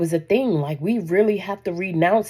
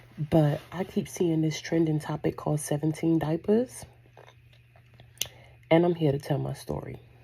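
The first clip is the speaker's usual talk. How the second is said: hushed, whispered speech; 3 semitones lower, 7 dB quieter than usual. Telling a story at two in the morning while people sleep, whispering. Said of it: "whispering to tell this story".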